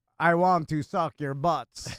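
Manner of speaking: classic horror-movie vampire delivery. Delivering the joke's last line to the others in a Dracula voice. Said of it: "Dracula voice".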